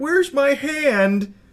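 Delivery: put-on high, silly baby voice, hand stretched out. Mocking a prankster's silly voice: imitating a silly voice. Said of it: "he's like".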